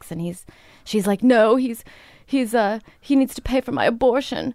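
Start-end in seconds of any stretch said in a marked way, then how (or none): 1.2-4.5 put-on bawling, girlish sobbing voice. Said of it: "there's this girl bawling".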